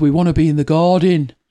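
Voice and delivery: put-on Birmingham accent. Describing an old TV advert to Tracy, quoting the man in it in a Birmingham accent. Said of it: "Birmingham accent".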